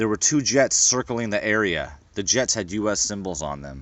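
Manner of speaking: plain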